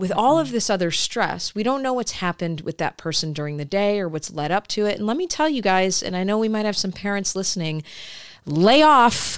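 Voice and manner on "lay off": loud, high-pitched yelling straight into the microphone. Speaking to any parents who might be listening: yelling into the microphone. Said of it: "She's yelling in the microphone".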